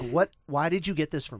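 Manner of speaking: put-on angry outburst. Retelling a girlfriend's reaction to a Bob Ross game: imitating someone angry. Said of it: "legit angry".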